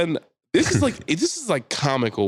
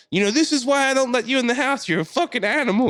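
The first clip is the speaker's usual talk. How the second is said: acted-out very high, shrill screaming tirade; 13 semitones higher than usual. Retelling a neighbor's words to a woman locked out: imitating someone screaming. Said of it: "He's screaming at her".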